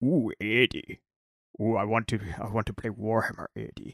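movie monster antihero voice. Showing a voice that can be done a little bit better: Tom Hardy as Venom impression. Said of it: "I like Tom Hardy as, uh, Venom a lot more".

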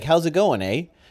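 put-on Canadian accent. Comparing accents, showing how a stereotypical Canadian would say it: stereotypical Canadian accent. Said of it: "a Canadian would be like".

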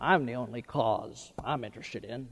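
very soft, badly done film-star voice. Quoting a film character in a sermon: horrible Humphrey Bogart impression. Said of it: "it was a horrible impression".

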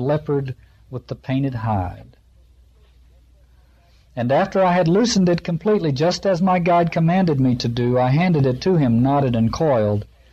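plain

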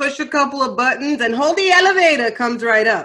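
thick, heavy New York accent, loud. Showing how New Yorkers sound, thick New York accent. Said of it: "definitely from the PJ".

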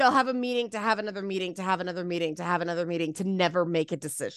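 fast, low rattle, trailing off and sinking.

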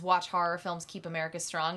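ordinary delivery

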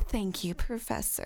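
put-on flirty voice. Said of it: "she's like".

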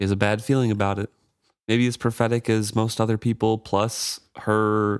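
plain

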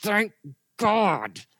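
ground out between clenched teeth. Recalling times of saying thank God; mock gritted-teeth 'thank God'. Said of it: "that was through gritted teeth".

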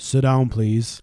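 put-on deep voice. Retelling a remark to some talking kids, in a put-on deep voice. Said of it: "Deep voice on".

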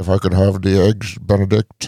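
put-on Scottish accent. Urged by another speaker to try it, Sean Connery impression. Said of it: "I don't want to butcher a Scottish accent".

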